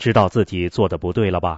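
ordinary delivery, nothing marked

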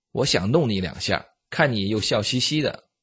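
ordinary talk

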